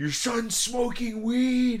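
very high, slow, top-of-the-lungs yell. Retelling a man yelling at the speaker's mother, imitating a man yelling. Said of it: "He starts yelling at my mother".

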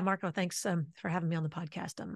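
flat delivery. Demonstrating a mismatched podcast introduction, in a flat voice. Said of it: "my flat voice".

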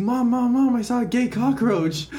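put-on freaked-out little kid voice, high, frantic. Telling a joke about a kid running up to his mom: imitating a freaked-out kid. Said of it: "he's freaking out".

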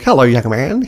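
put-on genial, charming, old-timey Australian accent. Quoting a river monster from a show greeting a kid, charming old Australian accent. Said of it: "speaks to him in a like a charming old Australian accent".

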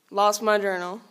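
ordinary talk, nothing marked

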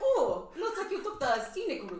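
put-on German accent, pitched very high and swooping. Retelling a friend teasing a gamer in a store: imitating a fake German accent. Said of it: "She was talking like she was German".

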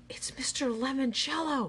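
gasping, high, heart-racing, gasped exclamation. Narrator reads a character spotting a man stepping out of a car, gasped. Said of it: "gasped Kyle, his heart racing".

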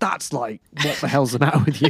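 loud, incredulous, laughing.

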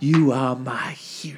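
put-on old-fashioned screen heroine style. Retelling a movie scene where a character wakes up: Gone with the Wind impression. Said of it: "doing the whole fucking, uh, I think it's, like, Gone with the Wind".

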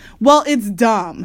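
said rudely. Sister answers her brother: rude. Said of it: "said sister, rudely".

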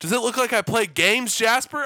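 very high, very loud, in-your-face yell. Retelling setting a cap of Tabasco in front of Jasper, retelling a yell. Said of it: "yelling in his face".

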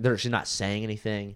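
plain

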